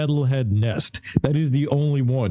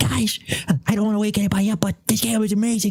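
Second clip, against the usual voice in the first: whisper, much higher pitch; 8 semitones higher than usual. Recording into a mic while someone sleeps nearby, retelling a whisper. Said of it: "I'm over here whispering like a little Gerber".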